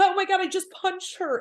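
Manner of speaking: acted-out tearful sobbing in a high voice. Imitating how Scheana would really say it: imitating Scheana sobbing. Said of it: "she would be sobbing and be like".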